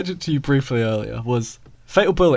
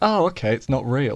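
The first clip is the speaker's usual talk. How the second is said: plain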